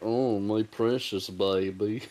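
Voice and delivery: very slow voice, every syllable stretched and drawn out. Recalling how the creature sounds in the Bakshi movie: imitating Gollum.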